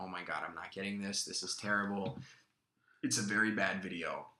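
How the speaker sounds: ordinary delivery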